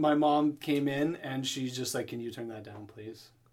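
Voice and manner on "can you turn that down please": very quiet, firm, stern tone. Retelling what mom said when she came in: imitating a very stern request. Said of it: "the very stern".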